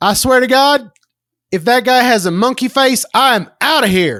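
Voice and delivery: high hillbilly character voice. Retelling what a moviegoer said standing up in the theater, imitating a hillbilly. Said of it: "this hillbilly stands up and he goes".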